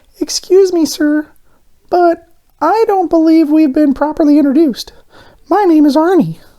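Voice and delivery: sweetest honeyed tone, very high, sugary-sweet. Reading a story aloud, a donut greets his host: sweetest voice. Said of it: "said in the sweetest voice".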